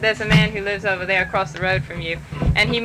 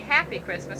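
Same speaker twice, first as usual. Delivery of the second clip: ordinary talk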